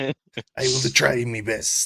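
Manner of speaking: very slow, loud, drawn-out put-on pirate voice. Joking about running the absent player's character next week: Nibbler pirate voice. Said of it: "I'm glad that you like my pirate".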